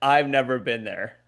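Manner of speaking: cold, level, dead serious deadpan delivery. Retelling how mom denied visiting a restaurant: imitating mom, dead serious. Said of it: "she looked at me like a fucking shark would look at its prey".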